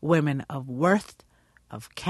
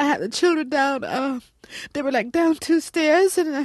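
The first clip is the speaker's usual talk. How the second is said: high, loud, whiny victim voice. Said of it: "kind of always high and, you know, whiny".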